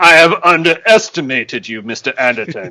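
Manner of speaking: villainous, evil spy-film villain tone. Playing a villain in a playful bit, addressing Mister Anderton: Bond villain voice. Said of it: "You sound like a villain, like a Bond".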